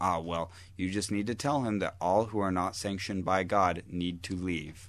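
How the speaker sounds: usual speaking voice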